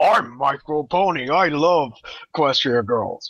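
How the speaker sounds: teasing, ribbing voice. Teasing another roundtable member by imitating him: Micro Pony impression. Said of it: "that was a Micro Pony impression".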